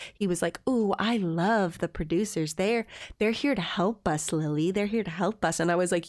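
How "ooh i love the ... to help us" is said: cheerful, happy, brainwashed gushing delight. Retelling how a returning contestant acted strangely happy: imitating Andrew's happy brainwashed tone. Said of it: "He came back and he was all happy".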